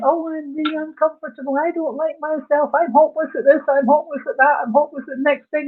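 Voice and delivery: self-pitying, whining moan. Demonstrating how someone talks down to themselves, moaning tone. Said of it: "and it's a moaning tone of voice".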